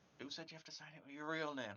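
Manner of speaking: muttering. Urging another character in the game to sign: muttering under breath. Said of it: "muttering under my breath".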